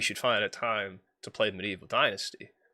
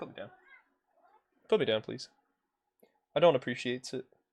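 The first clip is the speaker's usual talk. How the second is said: in-character talking cat voice; 3 semitones higher than usual. Holding the cat and speaking its protest aloud: voicing Stanley the cat. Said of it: "He's like".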